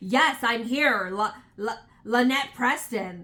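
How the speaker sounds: snippy voice with attitude. Retelling how a woman answered when asked to identify herself, mimicking a snippy reply. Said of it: "she got so snippy and attitude".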